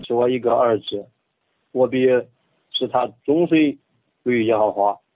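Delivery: reading aloud in Henan dialect. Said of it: "用河南话".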